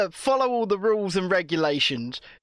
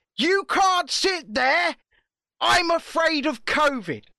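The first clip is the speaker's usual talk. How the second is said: shrill, high-pitched shout; 6 semitones higher than usual. Retelling how a young girl yelled at an elderly woman, imitating someone shouting. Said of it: "shouted in her face and said".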